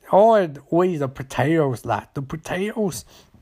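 bad, clumsy, wandering put-on Irish accent. Retelling a story, the speaker quotes a man: bad irish accent. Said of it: "Apologize to any Irish listeners".

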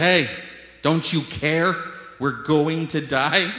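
mock frantic, scared, panicked cry. Retelling the disciples waking Jesus during the storm: imitating panicked disciples. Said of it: "His disciples are panicking".

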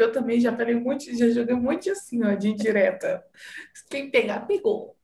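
speaking through nervous laughter. Admitting to having thrown indirect jabs too, laughing nervously while talking. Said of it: "eu tô rindo de nervoso".

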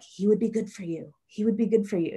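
mock inner-voice whisper. Retelling how a nagging intuition kept speaking: imitating a whispering inner voice.

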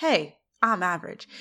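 ordinary delivery

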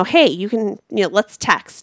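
ordinary talk, nothing marked

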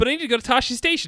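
loud, very high-pitched voice. Retelling a movie scene, quoting Luke: Luke Skywalker voice. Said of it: "but he says it like that".

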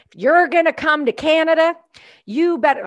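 put-on tough-guy Southern US accent, pitched high. Quoting a provincial leader on the news, the speaker uses a put-on southern accent. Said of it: "I've got your accent going here".

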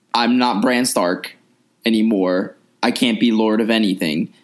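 ordinary talk, nothing marked

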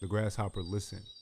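plain

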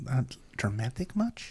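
very quiet, hushed, muttered aside. A character makes a very quiet aside to the ensign, very quiet aside. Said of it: "a very quiet aside to Tazi".

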